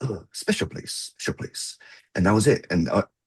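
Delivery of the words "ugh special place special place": put-on heavy Japanese accent, whispered and hushed. Retelling what a man answered when asked what he was telling them: thick Japanese accent. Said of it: "with a very thick Japanese accent".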